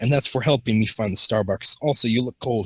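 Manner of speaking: usual speaking voice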